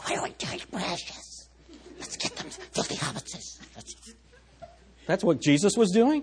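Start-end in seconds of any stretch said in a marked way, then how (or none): 0.0-3.6 hushed, breathy, barely voiced creature whisper. Joking about Jesus praying to himself, in a Gollum voice. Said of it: "So it's like Gollum".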